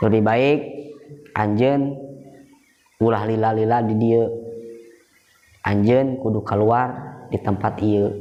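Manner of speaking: plain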